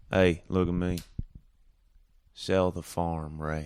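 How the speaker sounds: put-on southern drawl accent. Trying out accents while discussing Georgia and South Carolina drawls: Southern drawl accent. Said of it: "that was good".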